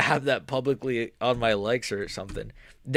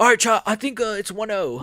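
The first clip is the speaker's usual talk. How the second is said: very high, loud, raised put-on British accent; 9 semitones higher, 5 dB louder than usual. Speaker tells chat the fight's score, in a British accent. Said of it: "I don't know why I did a British accent".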